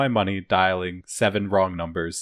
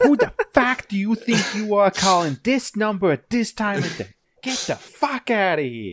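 thick, really strong Boston accent, pitched very high; 13 semitones higher than usual. Voicing how the wrong-number callers should have answered, really strong Boston accent. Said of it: "really strong Boston accents".

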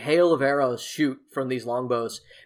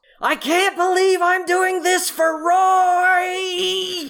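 very high, very slow, drawn-out all-out scream; 6 dB louder than usual. Voicing a gnome in goggles rescuing a character: screaming at the top of his lungs. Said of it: "a gnome in goggles screaming at the top of his lungs".

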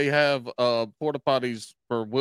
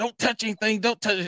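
put-on high hollering woman's voice; 7 semitones higher than usual. Retelling a woman in a porta potty hollering at her kid: imitating a lady hollering. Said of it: "this lady hollering at this kid".

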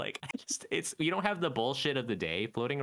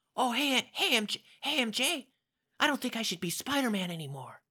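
put-on very high, young-sounding voice, much higher; 10 semitones higher than usual. Rehearsing a Spider-Man line while being coached, the speaker uses a high Peter Parker voice. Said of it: "Are you clenching your butt?".

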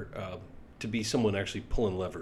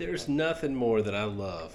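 ironic, sarcastic, meaning the opposite. Talking about people who want to jump rank at work, sarcastic. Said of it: "and I mean that sarcastically".

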